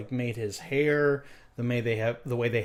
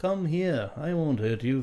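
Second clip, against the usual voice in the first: put-on nasal British accent, higher pitch; 3 semitones higher than usual. Imitating the original Obi-Wan's line: nasal British Alec Guinness Obi-Wan voice. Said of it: "that kind of nasally, but with, with a bit of a, a British accent".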